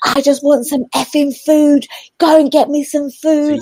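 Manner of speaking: screaming at high pitch. Recounting a woman's outburst heard along the high street, retelling her screaming. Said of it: "She was screaming at the with all their windows open".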